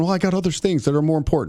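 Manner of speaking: plain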